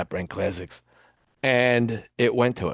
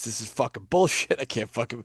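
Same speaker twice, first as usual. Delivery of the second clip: fed-up, frustrated, angry ranting outburst; 4 dB quieter than usual. Telling listeners how Vinny rants when he can't find something, imitating Vinny's angry rant. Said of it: "when Vinny gets pissed off".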